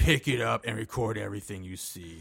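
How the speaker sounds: imitated creepy whisper. Retelling a movie scene where a masked captor talks to a captive: imitating a creepy whisper. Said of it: "whispering creepily in her ear".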